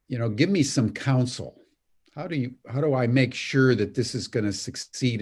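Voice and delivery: ordinary talk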